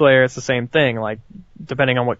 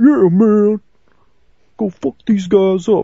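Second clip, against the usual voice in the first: slow, pitched-up bro voice; 8 semitones higher, 4 dB louder than usual. Mocking an annoying game character's lines: imitating Rico. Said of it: "he made everything like".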